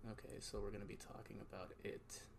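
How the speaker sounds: soft, bored narrator reading voice. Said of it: "then just switch it right now".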